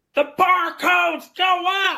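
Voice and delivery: very high, loud, top-of-the-lungs yell. Retelling how the guy doing the scanning came down, retelling a loud yell. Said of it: "yells at the top of his lungs".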